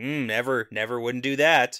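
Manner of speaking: put-on deadpan voice. Retelling Talmanis denying he mocks Matt: imitating Talmanis's deadpan denial. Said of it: "Without smiling, though".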